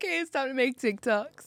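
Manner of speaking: very high, loud, weepy crying wail. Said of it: "and then I'm crying".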